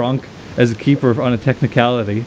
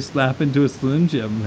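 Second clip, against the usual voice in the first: ordinary talk, nothing marked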